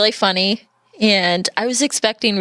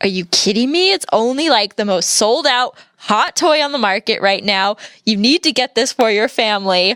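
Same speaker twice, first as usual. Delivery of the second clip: acted, mock let-down tone of disappointed disbelief. Retelling a Toys R Us employee pushing an N64 on the speaker's dad, mock disappointed disbelief.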